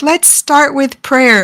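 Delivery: calm, sweet, gentle, soothing delivery. Retelling a comeback video with warm lighting: imitating someone speaking softly. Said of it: "she's speaking softly and she's all like".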